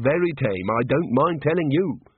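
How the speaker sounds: ordinary delivery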